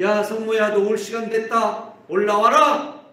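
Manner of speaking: high, loud, commanding calling voice.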